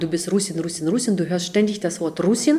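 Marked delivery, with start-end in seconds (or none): none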